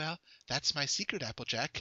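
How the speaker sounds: quiet, hushed delivery. Imagining a pony character as the Hulk: Fluttershy voice. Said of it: "imagine Fluttershy, like, looking back and going".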